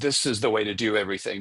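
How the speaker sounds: ordinary delivery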